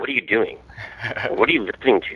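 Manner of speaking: hushed, shocked, disbelieving voice. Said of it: "Like he was all shocked".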